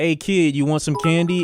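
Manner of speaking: mock sinister, creepy, coaxing delivery. Retelling how a man with a gold chain asked him, imitating a predatory tone. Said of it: "in like a very predatorial".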